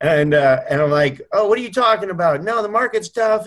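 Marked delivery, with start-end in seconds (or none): 1.3-3.5 high, whiny, put-upon tone. Retelling a call to a paid coach, imitating his own past whining. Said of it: "I'd be just whining away".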